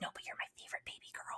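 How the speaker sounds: mock whispering. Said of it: "she's whispering to me".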